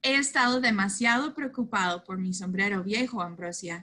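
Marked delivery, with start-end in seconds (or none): none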